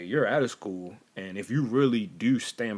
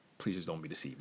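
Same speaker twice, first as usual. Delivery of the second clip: put-on gentle voice, lower and quieter; 4 semitones lower, 11 dB quieter than usual. Retelling what was said to one of the girls: retelling a very gentle plea. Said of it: "I just said it very, very gently".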